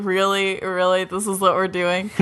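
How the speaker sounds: plain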